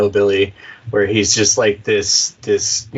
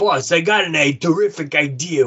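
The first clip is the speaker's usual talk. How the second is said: put-on wise guy mobster voice, much higher; 7 semitones higher than usual. Improvising a scene of mobsters looking for the best santa, wise guy mobster voice. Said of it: "I'm going for like easy use wise guys".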